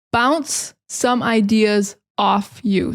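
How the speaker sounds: slow, careful, stress on "bounce". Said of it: "So the phrasal verb is bounce off".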